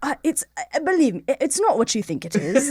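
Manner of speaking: put-on British accent. Acting out Jimbo answering people who doubt his name: British accent as Jimbo. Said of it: "he just has, like, g-, gorgeous British accent".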